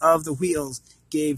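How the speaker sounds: ordinary delivery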